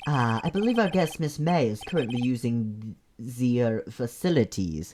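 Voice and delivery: fake bad French accent, sounds turned to z. Playing room-service staff, answering where a guest is, in a bad French accent. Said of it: "I'll just make stuff into Z noises".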